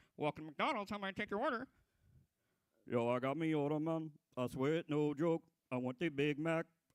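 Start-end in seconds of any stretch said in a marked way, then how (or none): 0.2-1.7 quick, rote, scripted drive-thru cashier voice. Imagining the worker who takes Shaggy's order, imitating a McDonald's cashier. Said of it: "the guy who like takes his order at McDonald's".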